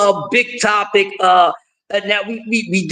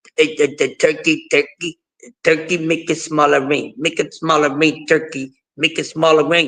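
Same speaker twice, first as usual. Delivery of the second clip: put-on fighter voice, broken phrases, words repeated; 6 semitones lower than usual. Retelling what Canelo said about the ring, Canelo impression. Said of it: "You know how Canelo is".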